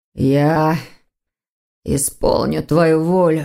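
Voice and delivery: words forced out through gritted, clenched teeth. Narrator reads the stranger's reply, spoken without turning around, through gritted teeth. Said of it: "сквозь зубы, процедил".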